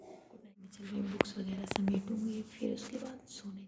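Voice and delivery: soft whispering. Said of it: "मैं धीरे धीरे बोल रही हूँ".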